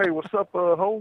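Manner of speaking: put-on Oklahoma accent. Imitating the friend who talks like he's from Oklahoma: imitating Jesse's Oklahoma accent. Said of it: "talks like he's from Oklahoma".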